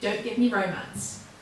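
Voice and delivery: ordinary delivery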